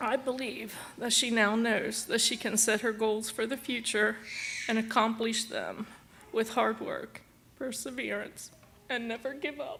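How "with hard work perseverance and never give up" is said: soft voice breaking into tears. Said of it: "You make me cry, too".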